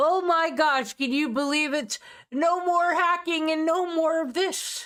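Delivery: hyped, excited streamer voice. Speaker imitates a Randall-like guy's announcement: imitating an excited streamer voice. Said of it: "doing it in like an exciting streamer voice".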